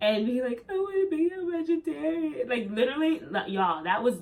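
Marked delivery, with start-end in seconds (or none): 0.7-2.5 mock wailing through tears, very high, hysterical. Retelling a call to her dad, speaker imitates her past self: imitating hysterical crying. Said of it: "like just hysterically crying".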